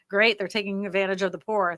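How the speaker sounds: normal talking voice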